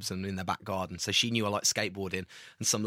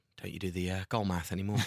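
put-on whisper. Retelling what a young man in Sainsbury's said to him, imitating a whisper. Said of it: "whispered under his breath".

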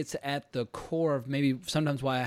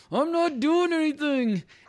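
very high, drawn out, forced through clenched teeth; 12 semitones higher, 5 dB louder than usual. Retelling freezing up as the brother snapped at them: retelling speaking through gritted teeth. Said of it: "I was like through gritted teeth".

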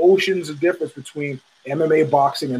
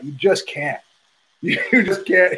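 choked-up, breaking voice, full of emotion; 3 semitones higher than usual. Talking about a fighter he is all in for, choked up. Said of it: "I'm getting choked up now talking about it".

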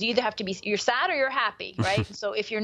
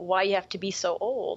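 put-on gentle, heartbroken voice; 2 semitones lower than usual. Quoting the wife in a book, imitating a gentle, heartbreaking voice. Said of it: "in that gentle, heartbreaking voice".

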